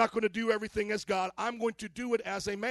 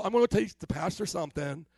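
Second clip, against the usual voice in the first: put-on breezy Valley girl voice and delivery; 3 semitones lower than usual. Speaker acts out someone wanting to teach the pastor something: Valley girl voice. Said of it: "That's more like a Valley girl thing".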